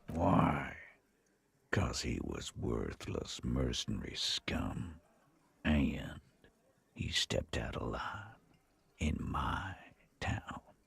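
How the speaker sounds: stage-whispered. Answering an officer's question about why he killed him: whispering. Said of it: "when he whispers like that".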